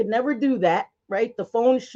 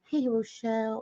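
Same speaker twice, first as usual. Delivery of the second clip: put-on sultry, sexy voice, quieter; 9 dB quieter than usual. Copying how two viewers greet someone: imitating a sexy voice. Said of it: "I don't have that sexy voice".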